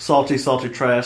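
ordinary talk

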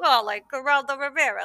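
put-on New Yorker accent. Quoting a film character after praising his accent: Bug's New York accent. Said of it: "Bug's New York accent was really great. He's like".

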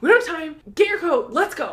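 loud, very high yelling. Retelling a friend shouting to hurry up: imitating someone yelling. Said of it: "you were yelling at me".

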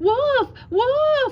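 terrified, shrill cry, very high and very loud. A frightened boy cries out as a growling wolf creeps closer, crying out in fear. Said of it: "cried the frightened boy".

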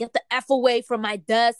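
loud, angry, defensive yell, put on. Retelling a woman's outburst at her office desk, retelling a defensive outburst. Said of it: "she got very defensive and was just like".

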